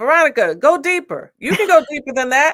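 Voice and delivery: shouted voice. Retelling being pushed during a scene: imitating Tyler yelling. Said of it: "Tyler kept yelling in the room".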